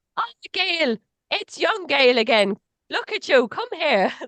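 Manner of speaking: put-on rough Irish accent. Imagining how a woman who made her feel safe would greet her; not very good irish accent. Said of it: "I can't do a very good Irish accent".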